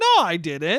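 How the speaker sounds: high-pitched, hesitant, voice jumping up on "no". Retelling a friend's denial: imitating a high-pitched denial. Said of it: "Listen to how high-pitched you fucking got".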